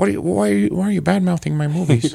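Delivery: high, creaky, raspy voice, angry complaining tone. Imitating George Lucas complaining about critics of his movies: imitating George Lucas mad. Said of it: "That's how George Lucas sounds when he's mad".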